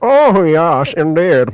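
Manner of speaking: high cartoon character voice, triumphant. Showing how to sound right in an argument: Nigel Thornberry voice. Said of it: "I could try and sound like Nigel Thornberg".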